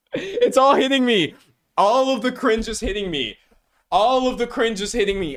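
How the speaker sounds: over-the-top, very high, cringing dramatic cry. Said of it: "That was dramatic".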